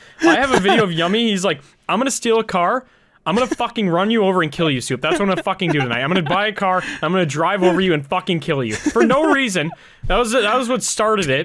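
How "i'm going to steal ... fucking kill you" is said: ordinary talk, nothing marked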